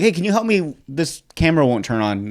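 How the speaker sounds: ordinary delivery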